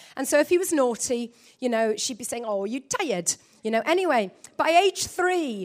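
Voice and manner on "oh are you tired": put-on Kenyan accent. Retelling how Roro would ask a naughty child: imitating Roro's Kenyan accent. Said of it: "so unique Kenyan accent".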